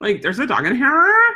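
put-on loud, high, grossed-out Valley Girl voice. Role-playing with clients, confronting someone about a dog, disgusted Valley Girl voice. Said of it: "I try to use my disgusted Valley Girl voice".

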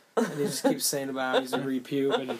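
ordinary talk

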